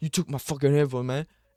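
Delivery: acted-out, mad, angry, aggrieved griping. Imagining a cellmate still mad after getting his headphones back; mock-angry complaint. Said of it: "he'd still be mad".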